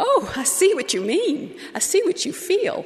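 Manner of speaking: high, sputtering, flustered delivery. A mother retelling her reply to an offended caller, retelling her sputtering reply. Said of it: "I sputtered".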